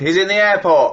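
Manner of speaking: fuming, high, drawn-out angry shout. Retelling shouting across at a man on a phone: imitating own shout. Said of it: "and I shouted".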